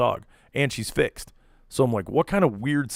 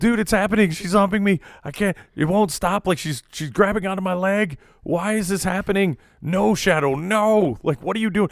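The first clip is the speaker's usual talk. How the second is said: high, mock panicked screaming and crying with laughter; 8 semitones higher, 4 dB louder than usual. Retelling a friend's phone call, imitating someone screaming while laughing. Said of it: "He called me literally screaming and crying, laughing".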